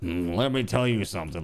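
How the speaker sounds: put-on gravelly deep old voice. Imagining Jeff Bridges coming out of the woods at random, doing a Jeff Bridges impression. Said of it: "Like in his like grizzled old voice".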